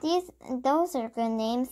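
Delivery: ordinary delivery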